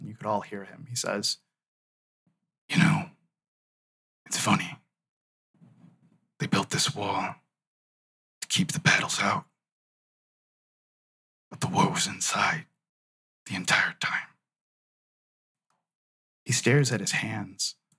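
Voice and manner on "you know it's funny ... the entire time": quietly muttered under the breath, lower. Voicing a character staring out at the wall: said under his breath. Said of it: "he says under his breath".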